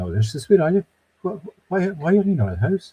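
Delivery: really indignant, high pitch.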